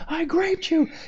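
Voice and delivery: very high, shrill mock screaming. Telling of early trash talking in team games, retelling own screaming. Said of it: "I was screaming to the top of my lungs".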